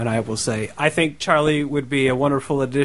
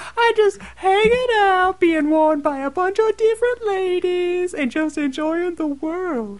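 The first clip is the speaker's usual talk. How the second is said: very high-pitched silly voice. Asked to do her pants voice, she answers questions as the pants, talking pants voice. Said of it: "Do her pants voice".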